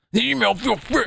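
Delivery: creaky troll voice. Reading a line of an email aloud in a troll voice. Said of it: "There's the troll voice".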